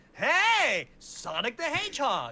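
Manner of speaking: very high, loud, swooping hero voice, "Hey" stretched. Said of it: "kinda voice".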